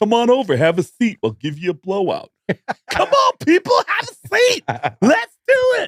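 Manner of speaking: very high, swooping, sing-song salon-owner patter. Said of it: "[name], hair salon owner".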